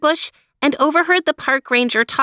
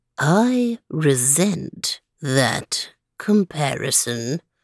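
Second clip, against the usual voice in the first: very slow, sluggish, drawn-out slug voice; 10 semitones lower, 4 dB quieter than usual. Narrator reading a slug's reply in a story, in a very slow slug voice. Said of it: "said a very slow voice".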